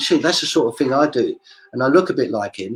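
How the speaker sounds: ordinary talk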